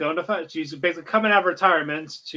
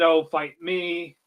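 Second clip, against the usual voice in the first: sobbing, tearful, pleading cry. Retelling an anime scene where a character begs: imitating a crying plea. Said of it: "crying, pleading".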